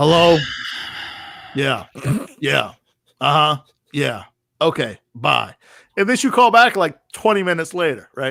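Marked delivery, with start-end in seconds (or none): 0.0-5.6 put-on very drawn-out, very slow, indifferent tone. Retelling how Will answered his girlfriend's call, imitating Will not caring. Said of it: "Didn't care".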